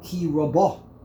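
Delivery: rabo with stress on final syllable -bo. Explaining hebrew cantillation, the word rabo: stress on last syllable of rabo. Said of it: "the trop is on lamata. Lamata means on the last syllable".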